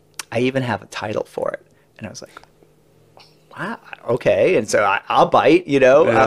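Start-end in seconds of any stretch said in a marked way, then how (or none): 0.3-1.7 put-on weighty, serious, dramatic delivery, quiet. Retelling how a colleague pitched a title, turning serious mid-talk: imitating Val getting serious. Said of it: "he looks at me like he's getting serious".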